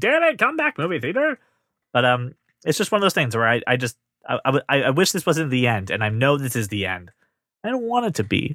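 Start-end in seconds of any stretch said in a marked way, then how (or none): 0.0-1.4 put-on cranky old man shouting, very high and angry. Joking about movie theaters going away: pretend old man yelling. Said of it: "I'm an old man yelling at cloud, going".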